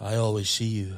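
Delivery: deep, bass romantic love voice. Reading a line aloud for the group: love voice. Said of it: "because I've got like a love voice".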